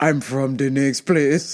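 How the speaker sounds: bad Jamaican accent, very low and deep. Quoting a line as Brad Pitt would say it, in Brad Pitt's terrible Jamaican accent. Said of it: "In his terrible Jamaican accent".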